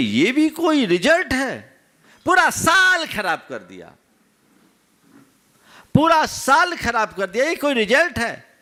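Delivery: high-pitched, angry grumbling. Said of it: "बड़बड़ाने लगा".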